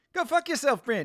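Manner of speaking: annoyed outburst, rising end. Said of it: "Murray finally gets angry at him and he's like".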